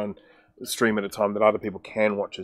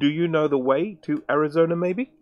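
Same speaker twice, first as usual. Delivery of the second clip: wooden, stiff alien voice, much higher pitch; 6 semitones higher than usual. Retelling how a man replies to a woman, in a wooden alien voice. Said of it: "He says it like an alien. ... kind of a bit wooden".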